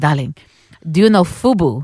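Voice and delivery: put-on English spoken with a Lebanese accent. Retelling what a man asked the speaker at about twelve: Lebanese accent. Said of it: "he came to me in his Lebanese accent".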